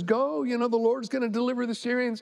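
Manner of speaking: ordinary talk, nothing marked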